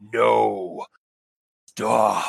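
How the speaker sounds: deep thrumming voice. Narrating a game, voicing a voice the players hear: deep thrumming voice. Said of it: "this deep thrumming voice".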